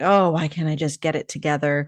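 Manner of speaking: ordinary talk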